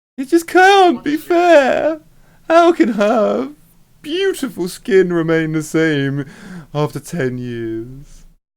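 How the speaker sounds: shrill, high, loud whine with swooping pitch. Narrating, speaker voices Ruth complaining about the Countess's beauty, irritating high-pitched voice. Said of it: "complaining in a in a really irritating high pitched voice".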